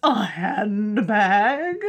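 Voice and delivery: put-on loud, hammy, plummy posh English accent. Explaining why the film's accents are funny, quoting Lady Bracknell, hammy plummy. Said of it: "the hammy, plummy accents make it funnier".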